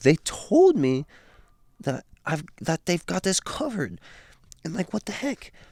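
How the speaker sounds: voice getting a little nervous. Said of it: "starts getting a little bit nervous".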